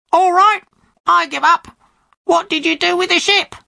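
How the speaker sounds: high, squawking parrot voice. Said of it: "the parrot opened its beak and squawked".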